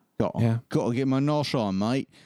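put-on Australian accent. Joking about the name Noshmates with the others, in a mock Australian accent. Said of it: "no way to talk about Noshmates without going Australian".

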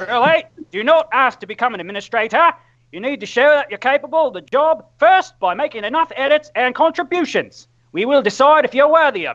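mock Australian accent, slightly high. Reading wiki rules aloud in a put-on voice: John Cleese doing Australian accent. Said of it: "that's a pretty good John Cleese doing an Australian accent".

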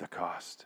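grave, intense murmur. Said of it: "and she goes".

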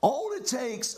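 voice cracking, pitched high. Speaking to listeners about faith when, mid-sentence, his voice cracks. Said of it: "Am I cracking my voice?".

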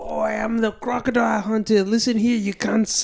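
put-on cocky, showy bravado voice. Imitating the Crocodile Hunter holding a snake: Crocodile Hunter impression. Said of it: "such a good crocodile hunter impression".

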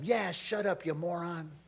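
normal talking voice

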